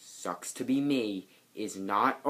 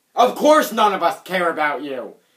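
very loud, way-too-angry outburst; 3 semitones higher, 10 dB louder than usual. Reading a scripted line to a 107-year-old birthday host, way too angry. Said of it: "That sounded way too angry".

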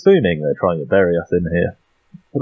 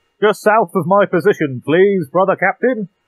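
pitched very high, slurred and mangled as if tongueless; 12 semitones higher than usual. A player in character asks the brother captain for a bombardment, tongueless techmarine voice. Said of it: "I don't know how many teeth you've got left, your tongue fell out your mouth".

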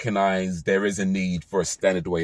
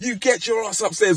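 put-on very high, angry shouting voice. Speaker explains telephone voices, acting out a mum yelling at her kid, imitating a shouting mum. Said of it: "your mum might be shouting at you".

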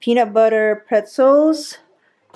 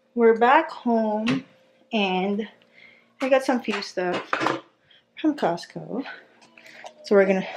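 winded, soft, halting, phrases breaking up; 6 dB quieter than usual. Back home, showing the Costco haul on camera, out of breath. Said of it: "I'm out of breath".

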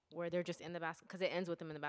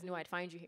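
plain

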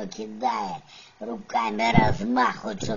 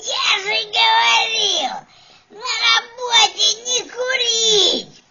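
very loud, shrill, high, drawn-out yelling; 9 dB louder than usual. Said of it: "Он такой начинает орать".

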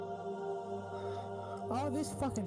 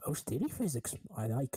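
put-on creature voice, pitched lower; 3 semitones lower than usual. Joking with co-hosts about a game's jiggle physics, doing a bad Yoda impression. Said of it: "That's a shitty impression".

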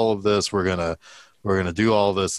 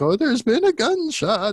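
put-on little old lady voice, very high. Retelling a story, voicing the old lady in it: old lady voice. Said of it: "and this old lady".

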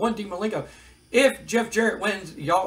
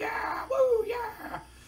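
very high, crowd-style whooping cheer; 4 dB quieter than usual. Retelling a crowd cheering at an announcement, imitating a cheering crowd. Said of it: "They're just like".

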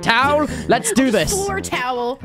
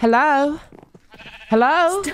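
put-on hunting voice; 2 semitones higher than usual. During a recording, one host calls out in a put-on hunting voice. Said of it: "Why are you doing that voice?".

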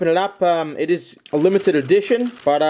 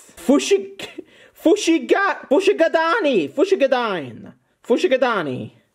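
Italian-accented speech; 9 semitones higher than usual. Reading out Japanese Pokemon names aloud, with an Italian inflection. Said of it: "sounds like I'm reading that with, uh, an Italian inflection".

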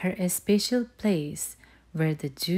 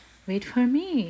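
pitched-up voice, laughing through the words; 6 semitones higher than usual. Mother Bear calls after Little Bear as he scampers off, laughing. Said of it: "laughed Mother Bear".

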